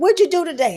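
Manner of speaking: cross, demanding tone. Retelling how the speaker, always mad, questions someone at home: mock-angry questioning. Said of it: "I'm mad all the time".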